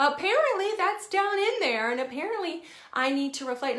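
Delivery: parodied Southern belle voice and accent.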